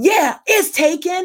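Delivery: sudden, loud, high-pitched scream. Retelling a stranger's answer about the seat: imitating someone screaming loudly. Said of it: "And he screams real loud".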